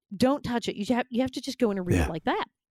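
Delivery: ordinary delivery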